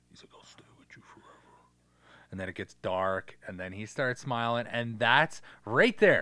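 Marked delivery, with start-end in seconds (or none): 0.4-1.3 demon voice in a whisper. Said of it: "I think it's in a different voice".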